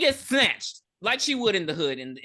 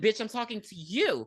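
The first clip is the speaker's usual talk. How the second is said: bold, fearless, unbothered tone; 4 semitones higher, 3 dB quieter than usual. Retelling a character answering gang members back: imitating Posey, not scared. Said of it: "very not scared".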